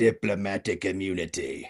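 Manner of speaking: voice dropped low. Quoting a line from a movie: Lethal Weapon 2 movie voice. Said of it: "I had the voice for it right now".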